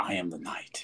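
low, breathy, barely voiced whisper. Retelling what a talking action figure said: Robert Pattinson voice. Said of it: "Did it have his voice?".

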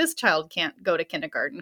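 put-on voice, laughing while talking. Retelling how a woman answered about kindergarten: imitating someone laughing while talking. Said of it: "she was just laughing".

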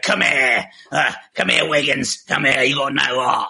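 put-on Cockney accent. Describing a character voice, in a put-on Cockney accent. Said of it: "I sort of like a more cockney".

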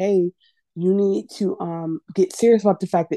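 ordinary talk

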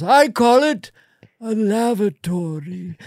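very slow, high, drawn-out Irish woman's pirate-like lilt. Voicing a genius pirate character who invents the toilet: [name]'s Irish voice as a pirate. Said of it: "that was coming from [name]'s voice".

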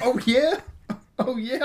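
mock very high, thrilled, excited gushing. Retelling a broadcaster's reaction to a dog's death: imitating an excited reaction. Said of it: "like that".

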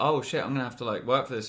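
usual speaking voice

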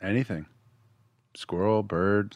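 flat, bored, uninterested tone. Answering which animal they would voice in a movie, in a flat bored tone. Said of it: "The most boring squirrel in cinematic history".

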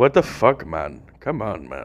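disgusted, half-hearted grumbling delivery. Acting out a batter's reaction to a strike call: imitating Pujols. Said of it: "I can't do a Pujols impersonation".

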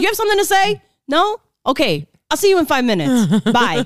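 irritated, impatient, curt and annoyed. Retelling past phone calls with a date, imitating own annoyed reply. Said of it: "I used to get so annoyed".

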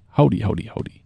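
cowboy character voice. Doing a movie reference for the others: Woody voice. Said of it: "Look, I'm Woody".

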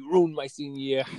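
mock screaming, loud and in-your-face. Retelling what a senior screamed at the coach: imitating someone screaming. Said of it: "he was screaming in Coach Manos' face".

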